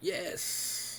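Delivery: excited cheer, high and breathy burst of joy.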